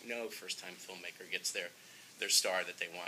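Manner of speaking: ordinary talk, nothing marked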